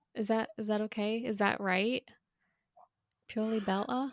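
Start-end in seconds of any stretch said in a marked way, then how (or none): 3.3-4.1 put-on British accent. Saying the show's name in the host's accent: imitating the host's British accent. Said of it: "I cannot say that phrase without doing it in an accent".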